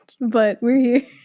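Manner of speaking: talking through laughter. Welcoming listeners back after a break, laughing while talking.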